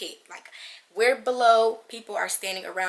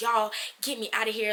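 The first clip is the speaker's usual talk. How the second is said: put-on scream; 3 semitones higher than usual. Retelling a dream where children became monsters: imitating her own scream. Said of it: "I just started screaming".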